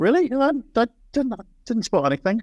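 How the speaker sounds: high, mock-surprised, sarcastic disbelief. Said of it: "you carry that sarcasm so well".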